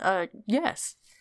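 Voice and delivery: shy, bashful, stammering voice. Voicing a shy character answering the blacksmith: shy stutter. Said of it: "she stutters".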